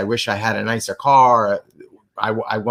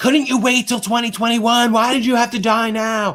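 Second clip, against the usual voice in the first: very high shriek at the top of the lungs; 12 semitones higher than usual. Retelling a video of a woman screaming while driving: imitating someone screaming. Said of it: "screaming at the top of her lungs".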